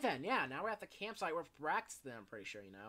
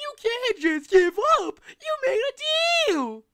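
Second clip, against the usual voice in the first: shrill, high, loud, belted cartoonish voice; 17 dB louder than usual. Reading a story chapter aloud and doing the Dougie voice. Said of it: "I'm gonna do the Dougie voice".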